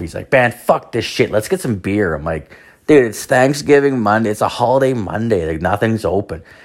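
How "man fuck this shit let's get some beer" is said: put-on pissed-off, fed-up, done-with-it outburst. Retelling a story, the speaker quotes a companion, mock-angry and pissed off. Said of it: "He's all pissed off".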